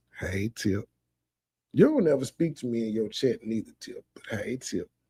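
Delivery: gentle, soft, hushed voice. Addressing cousin tip, who is watching in chat, soft voice. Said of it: "I gotta do the soft voice when they say cousin Tip watching".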